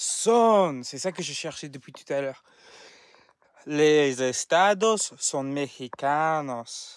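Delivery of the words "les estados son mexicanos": slow Spanish spoken in a foreign accent. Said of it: "can I speak Spanish without doing that accent?".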